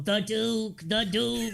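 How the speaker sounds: high, slow, echoing chorus. Voicing the vultures repeating a name as a little echo: echoing chorus of voices. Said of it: "this little echo".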